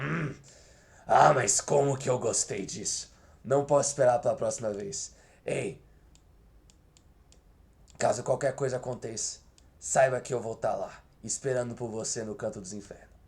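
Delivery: theatrical, badly acted sadistic villain voice. Showing how to roleplay a sadistic mercenary taunting a killed druid: sadistic mercenary character voice. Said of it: "eu gosto de mudar minha voz e interpretar".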